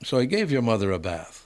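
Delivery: terrible, clumsy put-on Jamaican accent. Retelling what a man told them: terrible Jamaican accent. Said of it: "that's a terrible Jamaican accent".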